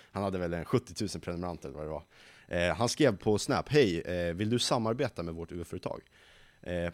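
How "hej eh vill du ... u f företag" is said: plain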